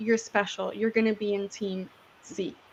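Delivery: soft, hushed, secretive half-whisper, close. Retelling words said into each participant's ear during the experiment: imitating a half-whisper. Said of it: "What I'm whispering in the".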